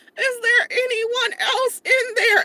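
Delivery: put-on loud, slow, very high, squeaky teen boy voice. Retelling what a teenage boy at Target said after she left the bathroom: squeaky teenage boy voice. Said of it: "like little squeaky voice".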